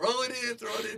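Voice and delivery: very high, yelled, screaming voice. Speaker retells screaming at a T-ball player to throw the ball in, retelling screaming. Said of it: "we're just screaming".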